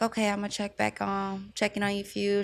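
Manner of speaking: ordinary talk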